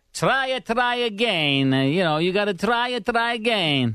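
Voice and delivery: put-on Italian accent. Echoing a character's line just heard, imitating Luigi's Italian accent. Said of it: "Are you making fun of him?".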